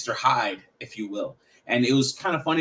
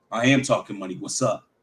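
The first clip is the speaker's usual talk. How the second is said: very dark, different-persona voice; 2 semitones lower than usual. Retelling what he said to a woman in a store: imitating his own dark voice. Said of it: "a very dark voice".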